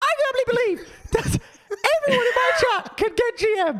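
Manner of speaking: tiny, little, very high-pitched voice. Retelling what a streamer said on his stream: little Super voice. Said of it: "he said in his little Super voice".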